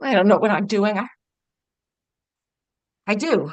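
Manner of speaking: tearful voice, crying while talking. Answering a partner who asks if they're crying: crying while talking. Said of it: "Baby, are you crying?".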